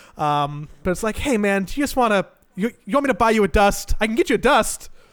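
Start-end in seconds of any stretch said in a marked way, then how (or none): 1.2-4.9 passive-aggressive, sweetly backhanded, pitched-up put-on friendliness. Speaker acts out what they say to people, mock-friendly passive-aggressive tone. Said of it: "I'll still say it with like a friendly tone".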